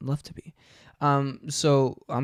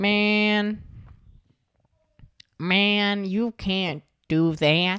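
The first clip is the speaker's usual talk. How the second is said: put-on trailer park kid voice, higher pitch; 8 semitones higher than usual. Trying out a made-up voice for Bobby Hill, a trailer park kid: Bobby Hill voice. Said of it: "so he gonna talk a bit like this".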